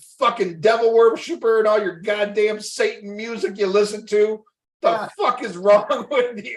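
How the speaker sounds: furious, high, angry rant. Retelling a wasted father's reaction after a movie: imitating an angry father. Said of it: "he got really mad".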